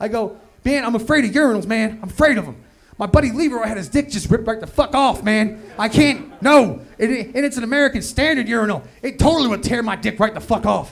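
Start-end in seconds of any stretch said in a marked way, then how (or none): 0.6-6.8 put-on, fake-sounding fearful panic. Retelling faking a fear of urinals to the supervisor: imitating a faked fear. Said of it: "I'm selling this irrational fear".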